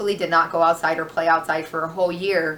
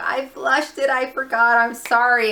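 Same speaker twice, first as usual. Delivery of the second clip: acted tearful child voice, high, slow, sobbing; 6 semitones higher, 3 dB louder than usual. Retelling a daughter running out after flushing: imitating a crying child. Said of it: "comes out running and crying".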